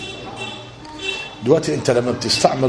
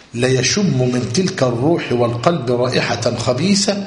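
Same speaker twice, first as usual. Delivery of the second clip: ordinary talk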